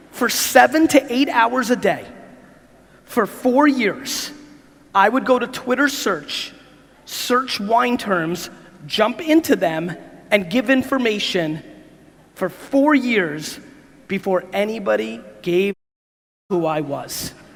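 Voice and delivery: slow, deliberate, measured, each word spoken separately. Speaker restates his own point one more time, said slowly. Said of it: "let me say that slowly one more time".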